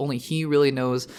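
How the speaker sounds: normal talking voice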